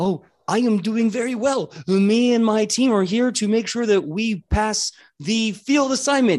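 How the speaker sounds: high, friendly golden retriever dog voice. Voicing a golden retriever archer greeting the party: golden retriever character voice. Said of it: "that good boy of a voice".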